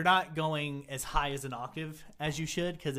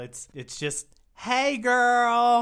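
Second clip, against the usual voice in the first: put-on "hey girl" inflection drawn out, much higher; 8 semitones higher, 9 dB louder than usual. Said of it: "Show us how to gayly "Hey girl."".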